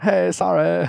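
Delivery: put-on British accent. Reading a text message aloud after being asked for a British accent. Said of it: "can you do a British accent?".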